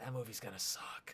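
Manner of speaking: hushed, quiet whisper. Imitating an audience member after a movie trailer: imitating a whisper. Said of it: "just kinda whispered to their friend".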